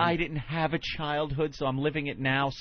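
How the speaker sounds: usual speaking voice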